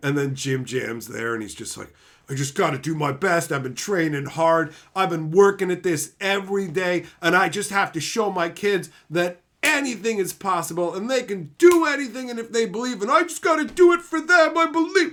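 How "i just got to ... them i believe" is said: acted, earnest, heartfelt, welling-up emotional delivery. Retelling a reality show contestant's speech about his kids: imitating someone getting emotional. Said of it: "they're getting fucking emotional".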